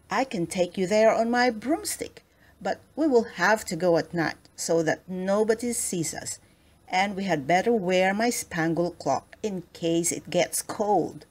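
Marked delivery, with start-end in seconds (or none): none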